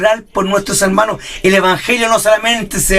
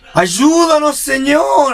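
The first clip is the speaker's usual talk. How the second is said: ironic, insincere, sarcastic tone, pitched up; 6 semitones higher than usual. Imitating a churchgoer praying while the preacher talks: imitating an ironic prayer. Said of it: "así irónicamente".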